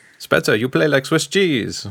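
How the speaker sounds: fake Swiss accent drifting into Italian sound. Reading fan entries and addressing spezza, in a fake swiss accent that sounds italian. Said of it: "my Swiss impression sounded Italian".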